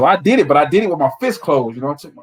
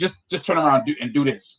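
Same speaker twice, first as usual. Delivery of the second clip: usual speaking voice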